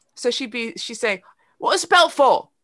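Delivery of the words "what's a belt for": put-on very thick British accent, little girl voice, shrill and loud. Retelling how a girl kept asking a question: imitating a girl's thick british accent. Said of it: "She had a very thick accent".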